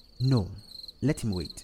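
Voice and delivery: plain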